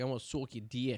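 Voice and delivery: put-on Long Island accent. Speaker says which accent they like on a girl, doing a Long Island accent impression. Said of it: "I like a Long Island accent on a girl when she's like".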